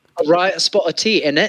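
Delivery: put-on English accent. Told to get the accent right, the speaker tries again in a mock english accent. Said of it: "that accent. Come on, get it right".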